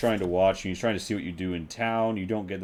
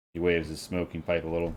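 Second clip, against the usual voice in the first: usual speaking voice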